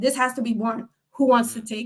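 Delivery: ordinary talk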